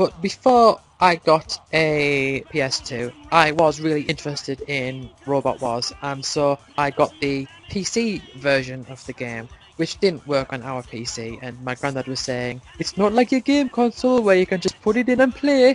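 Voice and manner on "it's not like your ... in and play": weird put-on Geordie accent, pitched up. Quoting a granddad's words about a PC game, in a put-on Geordie accent. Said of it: "why I put on that weird accent there".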